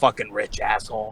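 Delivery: muttering under breath. Retelling what a bodyguard says as he walks off, muttering under breath. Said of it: "he just mutters".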